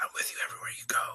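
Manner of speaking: eerie, very hushed, breathy, creepy whisper. Retelling a strange voice heard while on hold: imitating a creepy loud whisper. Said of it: "a whisper, but it wasn't, like, quiet".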